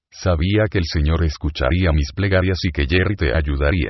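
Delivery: ordinary delivery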